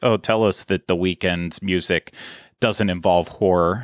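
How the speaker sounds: ordinary delivery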